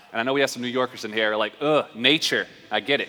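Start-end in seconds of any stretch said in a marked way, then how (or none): none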